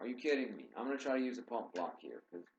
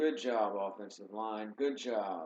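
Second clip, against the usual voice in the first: slow, mocking, heavily laid-on sarcastic tone. Praising the offensive line after a failed play: sarcastic. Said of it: "I'm being sarcastic".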